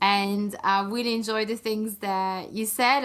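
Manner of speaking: plain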